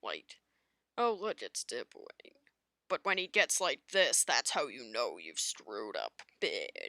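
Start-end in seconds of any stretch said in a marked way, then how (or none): 1.0-2.3 very still and calm, menacing villain voice. Describing a character in their Darkwing AU, showing his usual calm. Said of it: "Like it's typically very calm".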